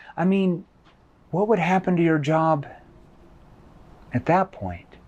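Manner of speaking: quiet, concerned voice. Demonstrating how to end a question, in a lowered concerned tone. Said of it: "I lower it back down at the very end here".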